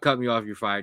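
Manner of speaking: ordinary delivery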